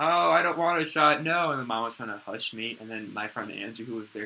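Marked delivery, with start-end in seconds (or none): 0.0-1.5 high, very loud, terrified scream. Retelling being scared of shots as a child: imitating own past screaming.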